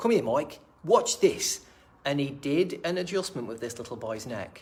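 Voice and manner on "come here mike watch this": clumsy, bad put-on New Zealand accent, raised. Retelling what a man said calling him over to watch: bad New Zealand accent impression. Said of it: "I wish I could do an impression of his New Zealand accent".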